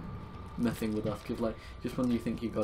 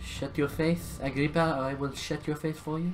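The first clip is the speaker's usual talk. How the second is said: over-the-top, exaggerated put-on French accent, high; 5 semitones higher, 4 dB louder than usual. A player mid-game, talking while playing, in an exaggerated french accent. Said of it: "Still very much French".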